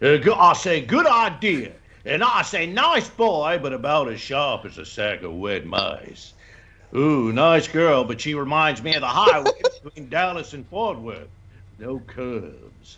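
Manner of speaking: full, exaggerated cartoon rooster character voice. Show how different one character's voice is from others, doing a Foghorn Leghorn voice. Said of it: "Foghorn Leghorn is such a different voice".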